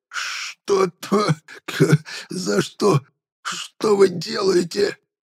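very slow, whispered, hoarse, wheezing rasp. A prisoner who has screamed his voice away speaks, wheezing hoarsely. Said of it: "просипел".

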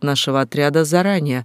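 ordinary delivery

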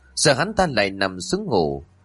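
ordinary delivery

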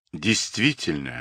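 embarrassed. Reading a story, a sorcerer replies after being reminded of a ban, abashed. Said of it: "сконфуженно откликнулся ведун".

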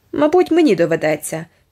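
grouchy, grumbled muttering. Told of worry for a child's fate, a woman gives a grumbled reply. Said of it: "відбуркнула пані Коновер".

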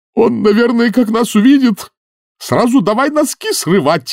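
shrill, very high, frightened wailing howl. As the wizards discuss the creature's tentacles, the senior Wrangler howls. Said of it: "взвыл старший Ренглер".

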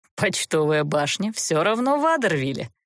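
derisive, needling, mocking, teasing tone. Gevert reminds the girl, mocking. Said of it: "насмешливо напомнил Геверт".

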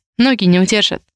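ordinary delivery

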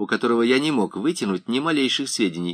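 plain

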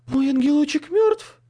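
very high, shrill, loud ghostly shriek. Reading a ghost story aloud, the ghost's line, shrieking. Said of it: "взвизгнул призрак".

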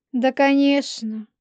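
high, drawn-out, mocking drawl. Polina answers the other speaker with a mocking drawl. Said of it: "Насмешливо протянула [name]".

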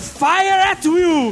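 put-on man's shout. Someone who was there tells how a man shouted at the climax, retelling a man's shout. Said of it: "o cara gritou".

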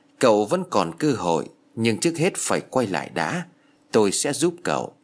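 ordinary delivery

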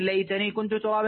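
ordinary talk

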